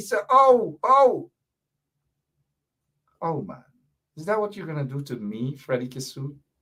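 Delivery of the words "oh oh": high, loud begging cry. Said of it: "he begged".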